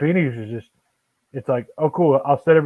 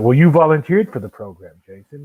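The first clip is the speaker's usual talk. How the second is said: brisk, raised, soothing, patronizing, rational condescending calm; 5 dB louder than usual. Retelling what he said to jason, in a mock-calm condescending voice. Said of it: "that voice that's very calming and seems very rational, but it's also very condescending".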